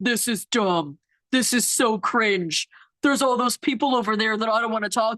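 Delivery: put-on, disgruntled, mumbled grumbling. Retelling what a bride's dad muttered at the wedding: imitating someone grumbling. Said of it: "he's making all these noises like".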